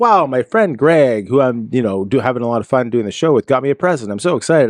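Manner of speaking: ordinary talk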